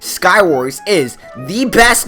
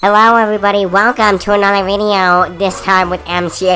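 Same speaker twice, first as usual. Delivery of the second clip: high helium-affected voice. Opening a Minecraft video after inhaling helium, in a helium voice. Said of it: "I just inflated and inhaled helium".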